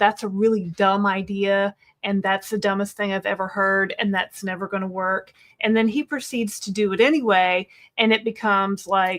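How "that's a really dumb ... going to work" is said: ordinary talk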